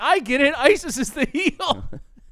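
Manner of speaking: loud, high scream with laughter. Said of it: "she just screamed".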